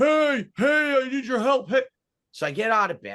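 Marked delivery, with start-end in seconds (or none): 0.0-1.8 play-acted, very high-pitched hollering yell. Retelling a neighbor hollering at the back porch door: imitating someone yelling. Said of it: "He's yelling".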